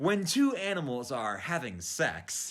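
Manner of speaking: very slow, drawn-out character-voice delivery.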